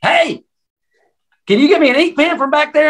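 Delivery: amped-up, loud shouting, pitched way up. Retelling how he talks to the speaker as the time gets closer, imitating him talking louder. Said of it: "he actually starts talking louder to me".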